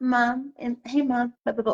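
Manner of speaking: put-on small, soft, wheedling baby voice. A mother imitates how her youngest son asks her for things: little baby voice. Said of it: "with the little voice".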